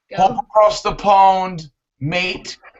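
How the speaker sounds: put-on British accent. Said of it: "I'm gonna do a quick U K accent".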